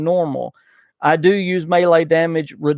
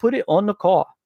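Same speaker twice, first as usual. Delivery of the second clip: put-on, attempted Boston accent; 3 semitones higher than usual. Answering a listener from Boston, the host tries an attempted Boston accent. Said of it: "all I do with the Boston accent is say".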